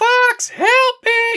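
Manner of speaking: very high, screaming, pleading voice. Explaining why one wingmate stands out, imitating Slippy screaming. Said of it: "she's screaming".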